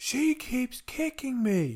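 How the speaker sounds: mock very high, shrill, drawn-out, tearful crying scream. Retelling what he screamed at the speaker, imitating someone screaming and crying. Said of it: "he's like screaming at me".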